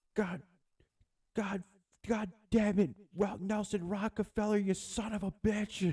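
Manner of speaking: very high, drawn-out, mock enraged swearing fit. Retelling grandpa hitting a pothole while driving: imitating grandpa cursing angrily. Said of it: "that dude getting so pissed".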